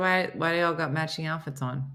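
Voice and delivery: ordinary talk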